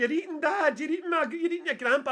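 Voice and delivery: mock very high, loud, tearful wailing. Retelling a mum's reaction in a video, imitating someone crying. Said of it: "started crying, going".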